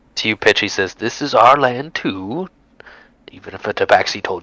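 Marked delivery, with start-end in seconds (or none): 1.0-2.5 hissing snake-like voice, higher. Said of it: "in a sort of slithering accent".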